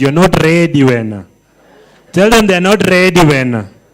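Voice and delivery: loud South African accent. Telling the audience what to say to their neighbor, in a south african accent. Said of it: "use the South African accent".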